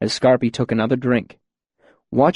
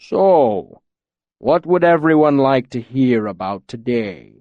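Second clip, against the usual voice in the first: low, deep, rolling rumbling voice. Scarpy addressing everyone at the bar, in a deep rumbling voice. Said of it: "Scarpy rumbled, his deep voice rolling out like distant thunder".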